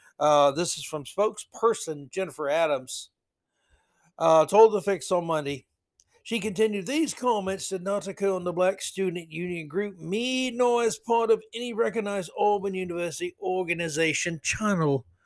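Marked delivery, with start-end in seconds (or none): 6.9-15.0 put-on British accent voiced as a man. Reading out a university spokesperson's statement in a male british accent. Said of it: "Why I gave her a male British accent".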